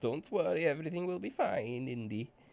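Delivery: patchy put-on Russian accent. Game master voicing a character speaking to the party, in a Russian accent. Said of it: "We speak bits of Russian accent".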